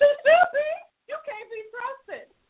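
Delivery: voice cracking with tears.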